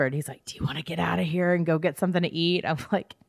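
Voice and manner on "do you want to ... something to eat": put-on whisper. Retelling how Paul asked to go out to eat: imitating Paul's whisper. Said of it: "he kinda whispered".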